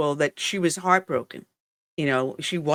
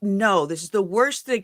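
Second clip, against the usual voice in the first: acted half-shouted mild yell of dismay and protest; 4 semitones higher than usual. Retelling screaming at the tv as a kid: imitating own past screaming. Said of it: "I was screaming at the T V".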